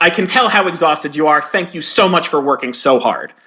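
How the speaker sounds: ordinary delivery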